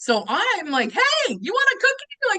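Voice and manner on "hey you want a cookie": put-on very high-pitched, loud holler. Retelling calling out to passing buyers at an expo: imitating own yell.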